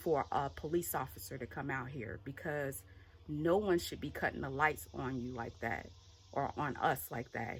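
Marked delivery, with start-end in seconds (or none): none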